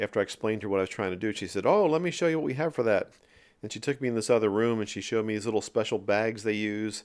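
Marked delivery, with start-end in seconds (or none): 1.7-3.1 put-on lovely Irish accent, pitched up. Retelling what a helper said after hearing the request: imitating Moira's Irish accent. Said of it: "in her lovely Irish accent".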